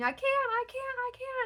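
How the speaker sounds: very high, stretched-out, acted cry of pain. Recounting giving birth as the midwife tells her to get on the bed, retelling her own shouting. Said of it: "and I'm shouting".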